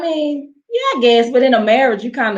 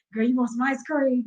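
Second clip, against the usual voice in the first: playful fake whisper, much quieter; 2 semitones higher, 8 dB quieter than usual. Acting out a whisper in bed during a joking conversation, mock whisper. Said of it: "What you gonna whisper to me in my bed?".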